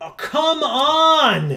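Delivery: angry, loud shout pitched way up, "on" drawn out. Frustrated mid-conversation, the speaker is yelling. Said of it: "Sorry, I'm just yelling at this point".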